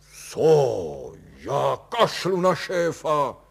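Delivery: shouting out, yelling. Kalous answers a woman's remark about his boss; shouting out. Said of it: "rozkřikl se Kalous".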